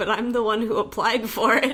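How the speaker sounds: ordinary talk, nothing marked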